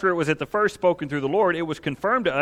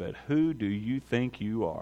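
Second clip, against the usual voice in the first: low, slow, soft demon voice. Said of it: "I'd do that verse in a demon voice".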